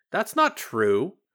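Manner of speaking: firm, protesting. Answering the claim that nobody knows who they are, protesting. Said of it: "Glint protested".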